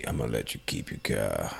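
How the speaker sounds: very deep, very quiet, rough, barely audible mutter. Quoting a movie race scene: Vin Diesel impersonation. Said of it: "That was a great impersonation".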